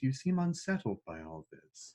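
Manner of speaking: softly spoken villain voice. The game narrator voices the Dark Star addressing the players: soft Dark Star voice. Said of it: "that that soft voice".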